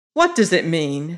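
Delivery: blunt, direct, demanding tone. Narrator reads a woman's question to a man: demanding bluntly. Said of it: "She demanded bluntly".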